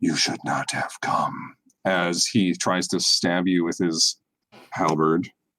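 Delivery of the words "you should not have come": deep, low demonic voice. Narrating a game, voicing a demonic creature speaking into Aaron's mind, deep telepathic voice. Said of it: "telepathic, deep voice which says".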